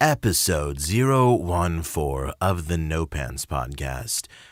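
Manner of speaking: slow movie-trailer announcer voice. Opening the podcast episode as the movie trailer guy: Don LaFontaine movie trailer voice. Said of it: "do I sound enough like the movie guy".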